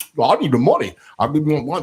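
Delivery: crazy-man voice with smacking eating sounds. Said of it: "He just sounded like a crazy man".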